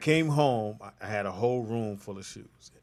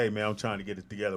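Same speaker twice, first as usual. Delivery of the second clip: normal talking voice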